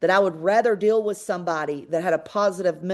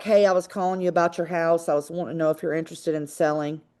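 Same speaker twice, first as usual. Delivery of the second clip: unsmiling, dull, flat and glum delivery; 2 semitones lower than usual. Showing a phone call about a house, speaker uses a frowny-face voice. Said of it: "you've got a frowny face, and you're like, ... You can hear it in my voice".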